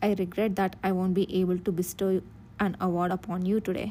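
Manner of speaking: ordinary talk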